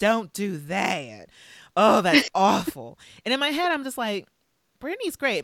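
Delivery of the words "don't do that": put-on Texan-accented voice. Quoting his answer to her question, put on a texas accent. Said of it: "So we have like a Texas accent on".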